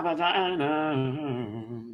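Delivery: playful, slow, drawn-out vagina. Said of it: "Do all that kind of good stuff".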